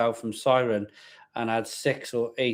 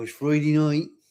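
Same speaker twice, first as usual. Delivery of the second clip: put-on Wiltshire regional accent; 3 semitones higher than usual. Retelling the line said when the wife gets in from work: Wiltshire accent. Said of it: "'cause she's from Wiltshire".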